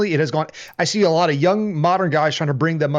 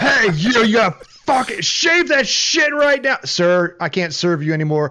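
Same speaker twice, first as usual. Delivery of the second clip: mock drunk voice, much higher pitch; 4 semitones higher than usual. Retelling a bar story, imitating the drunk man who confronted the gentleman. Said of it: "this drunken fucking ass like".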